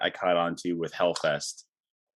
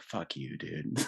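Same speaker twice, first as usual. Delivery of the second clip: soft, hushed whisper under the breath; 8 dB quieter than usual. Retelling crying at a movie on date night: imitating own whisper. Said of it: "I'm just whispering".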